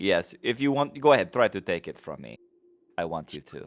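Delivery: acted-out smug, belittling, condescending, taunting tone. Playing a character daring another to take their weapon: condescending taunt. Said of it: "a condescending, like, smiling head shake".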